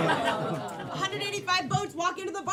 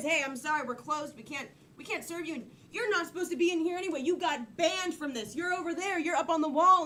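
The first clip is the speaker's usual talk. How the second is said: ordinary talk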